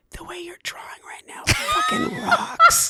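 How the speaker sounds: very high-pitched, hot, breathy whisper. Showing how a parent would whisper into their kid's ear, breathy whisper in the ear. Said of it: "with your hot breath in their ear".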